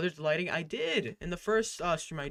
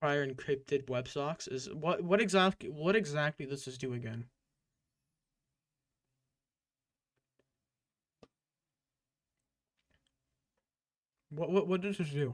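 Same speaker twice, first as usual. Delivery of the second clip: speaking with a full mouth. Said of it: "There is something in my mouth".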